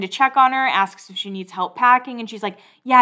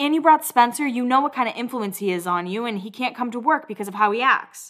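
usual speaking voice

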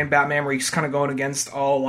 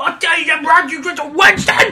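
put-on urchin voice, much higher pitch, louder; 8 dB louder than usual. Mocking how Sherlock Holmes talks here, like a coked-out street urchin. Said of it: "he talks like a fucking, like, you know, coked out street urchin".

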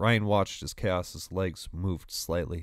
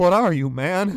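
very high, shrill, very loud, frantic panicked cry; 11 semitones higher, 9 dB louder than usual. Ryan questions Chaos, who stands wrapped in flaming metal, panicked. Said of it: "Ryan asked, panicked".

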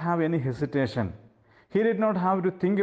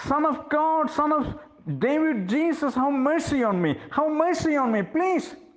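mock desperate, very high-pitched, powerful shout; 9 semitones higher than usual. Retelling a blind beggar crying louder after being told to be quiet: retelling a powerful shout. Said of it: "he started shouting with all powerful voice".

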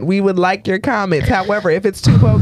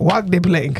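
put-on stage pirate voice with a Jamaican lilt. Asked about the pirate voice, doing a pirate voice. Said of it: "The pirate voice?".

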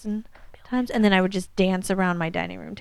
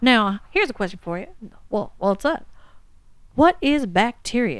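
put-on old-fashioned recording voice; 3 semitones higher than usual. Describing people on old thick records, imitating one guy: old-timey 1910s record voice. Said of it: "they talked like this".

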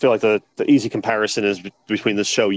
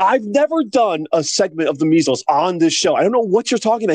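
exasperated, raised-pitch tone; 9 semitones higher than usual. Retelling a news anchor's reply to a confused guest: imitating an exasperated anchor. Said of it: "she starts getting all exasperated".

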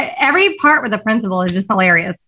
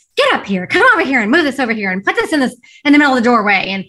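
put-on yelling voice; 2 semitones higher than usual. Speaker retells a man ordering Andrew around, imitating someone yelling orders. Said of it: "he's like yelling at him".

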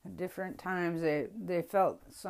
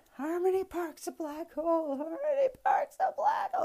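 frantic, shrill, swooping, very high top-of-lungs scream; 12 semitones higher, 4 dB louder than usual. Retelling how a kid freaked out near the stage: imitating a kid screaming. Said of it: "screaming this at the top of his lungs".

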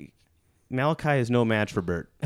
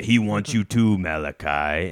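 mock frenzied demon voice; 3 semitones lower than usual. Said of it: "Isaac comes out of the corn with a crazy demon voice".

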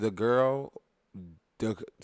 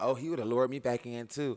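plain

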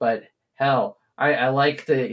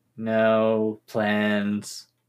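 put-on sullen, depressed teen voice, drawn-out no; 3 semitones lower than usual. Answering whether there is an evil plan, like a depressed teenager. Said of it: "now you sound like a depressed teenager".

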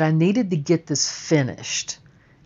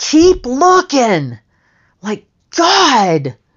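loud, high-pitched, put-on exasperated yell; 7 semitones higher, 6 dB louder than usual. Retelling yelling back up to him at the window: retelling own yell. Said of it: "I just yell back up".

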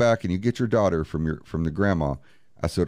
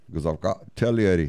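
put-on serious Irish accent; 2 semitones higher than usual. Retelling a man's reaction after watching the videos, in an Irish accent. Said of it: "he has this serious Irish accent".

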